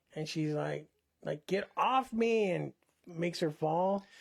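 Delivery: normal talking voice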